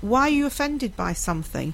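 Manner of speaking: normal talking voice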